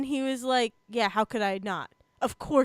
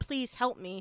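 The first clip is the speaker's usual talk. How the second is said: mock pleading, quieter; 2 semitones lower, 6 dB quieter than usual. Retelling a game scene where a character begs for help: imitating someone pleading. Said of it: "he is again still pleading for".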